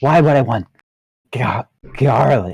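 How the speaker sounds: disgusted, stumbling voice dripping with disgust. Narrating a scene, the speaker voices an orc's reply, disgusted. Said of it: "you can almost feel the in his voice the disgust".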